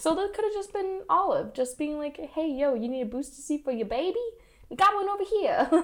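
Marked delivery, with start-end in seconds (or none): 2.2-5.8 put-on thick, casual New York street accent. Acting out what Olive might have said at the theater, in a New York accent. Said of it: "That's my New York accent".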